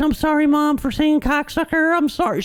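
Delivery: squeaky, sheepish, very high and meek. Retelling apologizing to his mom after yelling a swear; retelling a meek apology. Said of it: "being a little bitch".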